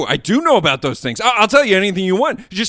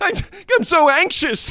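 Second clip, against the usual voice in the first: raised pitch, higher voice; 6 semitones higher than usual. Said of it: "Keep that energy level".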